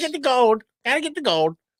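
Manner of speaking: put-on high-pitched old gold-rush prospector voice. Joking about wheezing the juice, speaker slips into an old prospector voice. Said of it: "You kind of sound like an old prospector".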